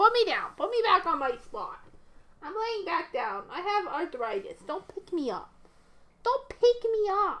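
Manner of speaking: put-on grumpy dog voice. Speaking for a pet dog after being picked up: voicing the dog as mad. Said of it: "She said".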